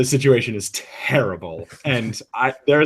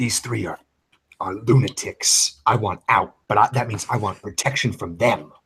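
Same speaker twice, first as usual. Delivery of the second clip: hushed, kept under the breath; 4 semitones lower, 4 dB quieter than usual. Role-playing a character offering to surrender, in a hushed tone. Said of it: "I'll like in like a hushed tone".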